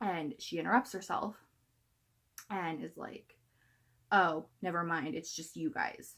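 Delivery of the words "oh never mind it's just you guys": put-on sassiest snooty, sassy mean-girl tone. Retelling what a store greeter said on seeing the group, imitating a sassy voice. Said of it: "in the most sassy voice ever".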